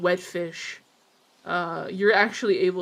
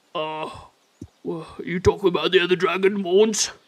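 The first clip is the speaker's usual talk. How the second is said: put-on dog character voice, louder; 4 dB louder than usual. Voicing Poogie answering a player's question: Mister Poogie's voice. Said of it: "I love Mister Poogie's voice".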